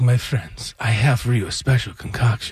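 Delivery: enigmatic, mysterious male delivery. Retelling a story, quoting the mysterious guy offering a drink: imitating his voice. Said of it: "And he talks a little like that".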